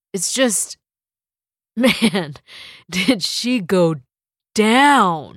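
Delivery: speaking through laughter. David answers his mom, who asks what is so funny; laughing. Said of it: "It's not funny".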